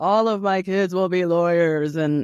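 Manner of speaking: put-on firm, declaring tone in a Dominican accent. Talking about the book, the speaker quotes what Papi always said: imitating Papi's deep Dominican accent. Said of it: "like with this voice".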